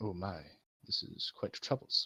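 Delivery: deliberate, slow, thoughtful, hushed, methodical whisper. Playing a character who checks on someone injured by bombs, slow and methodical. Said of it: "talks more methodically, slowly, thinkingly".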